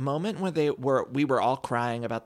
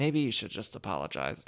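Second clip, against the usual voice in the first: soft, quiet half-whisper; 4 semitones lower, 5 dB quieter than usual. Retelling what one cast member told another: imitating a whisper. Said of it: "would just sort of whisper to her".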